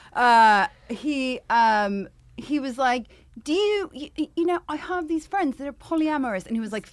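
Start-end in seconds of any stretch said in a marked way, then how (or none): 3.5-6.5 put-on English accent, higher pitch. Retelling what a date said to the speaker: imitating a British accent. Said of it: "It's British accent".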